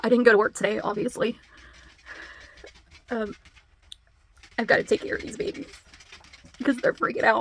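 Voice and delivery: speaking while crying, tearful. Talking to you guys while caring for the babies, crying. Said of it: "now that I'm crying".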